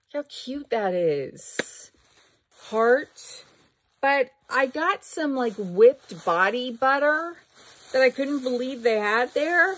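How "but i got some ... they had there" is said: voice cracking mid-sentence, pitched up. Going through bags and showing viewers what was found, voice cracking. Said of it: "Listen to my voice crack".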